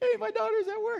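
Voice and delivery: very high, sing-song voice.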